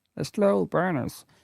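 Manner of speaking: put-on American accent. Speaker quotes what Sox fans said about FSG, in a put-on American accent. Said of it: "with the American accent".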